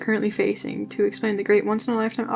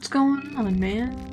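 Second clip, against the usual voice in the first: plain reading voice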